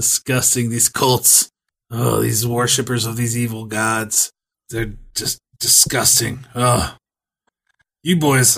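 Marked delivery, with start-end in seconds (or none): none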